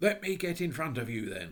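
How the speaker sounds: severe, stern tone. Robert speaks to Jane from behind her: stern voice. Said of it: "said the stern voice of Robert".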